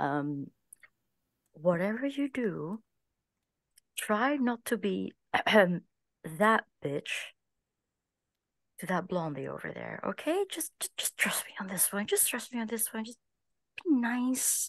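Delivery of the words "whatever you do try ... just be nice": pitched-up whisper scream. Voicing a character warning a friend in a loud place: whisper screaming. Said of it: "I am going to whisper scream in her ear".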